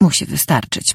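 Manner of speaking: ordinary delivery, nothing marked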